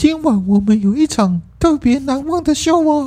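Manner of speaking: very high-pitched put-on cartoon mouse voice. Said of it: "米奇跟米妮不就是这样讲话吗".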